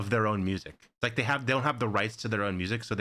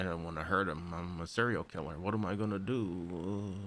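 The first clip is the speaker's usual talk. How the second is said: put-on sleepy narrator voice, lower, quieter; 3 semitones lower, 7 dB quieter than usual. Comparing the show's voiceovers, the speaker mimics the later narration, mock-sleepy Dexter voiceover. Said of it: "Like he's taking a nap".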